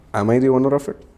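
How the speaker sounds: imitated sarcastic tone. Retelling own reply to a question about news hype: retelling own sarcastic reply. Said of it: "of course, sarcastically, I was like".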